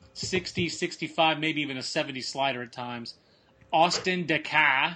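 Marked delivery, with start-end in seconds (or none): 3.7-5.0 loud, bad Northeast accent, worst possible. Speaker names a pitcher to Clint, saying it in his worst Northeast accent. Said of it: "with my worst Northeast accent".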